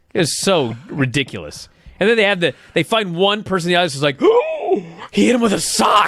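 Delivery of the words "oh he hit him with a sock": mock, very slow, drawn-out, stunned, shocked gasp. Retelling a fan in the audience reacting: imitating a shocked fan. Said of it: "That shocked fan".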